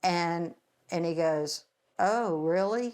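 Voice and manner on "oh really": flat deadpan, emotionless, higher pitch. Retelling the ex-husband's reply to news of a murder: imitating a flat, emotionless reply. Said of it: "Just, like, no emotion".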